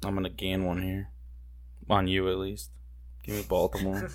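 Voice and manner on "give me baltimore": soft and grudging. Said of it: "You say that very begrudgingly".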